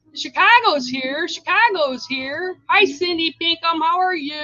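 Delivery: high, loud shouting at full voice. Greeting people by name as they arrive: yelling. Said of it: "I know I'm yelling again".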